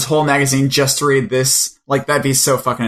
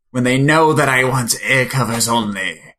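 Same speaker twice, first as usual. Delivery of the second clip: put-on eerie, creepy voice. Talking books with a co-host, the speaker slips into a creepy voice. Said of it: "that's my creepy voice".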